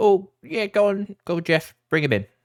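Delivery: very high, loud goblin voices. The storyteller voices two goblins who step back and answer, in goblin voices. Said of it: "they take a step back and they go".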